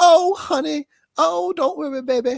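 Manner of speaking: friendly, neighborly voice, very high, loud and slow. Describing a neighborly person, then quoting her as Lucinda: Lucinda impression. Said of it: "That sounded just like Lucinda".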